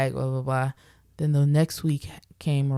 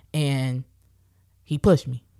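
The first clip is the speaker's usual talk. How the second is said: plain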